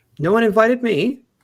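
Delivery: shrill, high, loud, grating annoying voice. In a group roleplay, a voice comes from behind the players: Eva's really annoying voice. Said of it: "you hear a really annoying voice from behind you".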